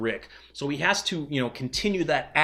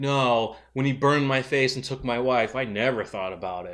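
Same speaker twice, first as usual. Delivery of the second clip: mock wry, somewhat sarcastic tone. Retelling how Dwight answered Simon's question: imitating a sarcastic reply. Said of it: "kind of sarcastically".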